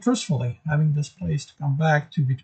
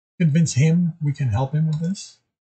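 plain

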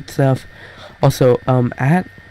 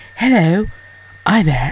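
fake British accent, higher pitched; 5 semitones higher than usual. Speaker showing off the British accent they always wanted, fake British accent. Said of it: "I've just always wanted a British accent".

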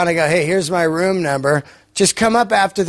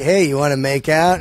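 put-on playful joking tone, lower; 3 semitones lower than usual. Retelling how he asks someone to make out: imitating a joking tone. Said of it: "Like, in a joking way".

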